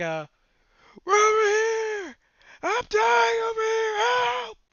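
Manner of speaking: shrill, rising, very loud, high scream. Narrator voicing a conscious enemy shouting to his allies, screaming for help. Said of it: "he is screaming for".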